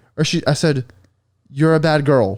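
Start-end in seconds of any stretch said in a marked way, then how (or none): 1.5-2.4 dead straight, flat delivery with zero emphasis. Retelling a nervous line to a partner: imitating own flat delivery. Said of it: "with no emphasis, dude. Just straight".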